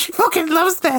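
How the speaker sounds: very high, fake, tearful crying shout. Acting out a dumped rival on the sea front: mock crying shout. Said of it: "he's crying on the front".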